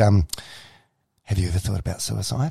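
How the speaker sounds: hushed, quiet tone. Retelling a therapist's question to the listener, in a hushed voice. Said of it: "she said in a hushed voice".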